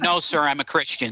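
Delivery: ordinary delivery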